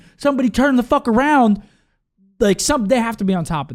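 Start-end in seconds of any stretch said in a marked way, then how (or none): 0.2-1.6 mock, all-out, high-pitched screaming. Recalling a moment in a match review: retelling own screaming. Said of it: "and I was screaming".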